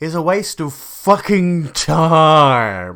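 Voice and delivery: put-on loud, very slow, self-assured, assertive delivery. Pointing out how another man inflects a remark, the speaker mimics his assertive inflection. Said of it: "look at the way that he inflects that there".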